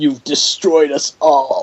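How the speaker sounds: slow, drawn-out dying voice. Imitating a game character as he dies: imitating Liu Kang's dying words. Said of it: "I love when he dies and he's just like".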